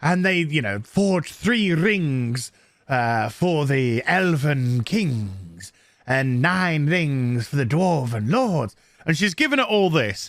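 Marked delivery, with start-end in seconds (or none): 0.8-8.8 quaint, slow British narrator voiceover. Retelling a film's opening voiceover by a woman: imitating a British female narrator. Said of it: "quite, like, British and stuff, and she's like".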